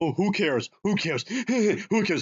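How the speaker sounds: offhand, high tone. Speaker mocking the man he is critiquing, mock yelling. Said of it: "Look at me! I'm yelling!".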